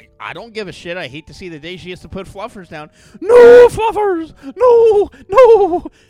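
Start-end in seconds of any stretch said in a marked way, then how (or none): 3.2-5.8 put-on voice of an old nanny. Imitating a lady wailing over her cat: Mrs. Doubtfire voice. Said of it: "why she sounds like Missus Doubtfire".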